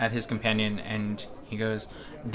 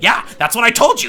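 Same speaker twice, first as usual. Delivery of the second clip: put-on very high-pitched, very loud, shrill old man voice; 13 semitones higher, 14 dB louder than usual. Narrating a game scene, an old man chimes in: shrill old man voice. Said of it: "that shrill old man's voice".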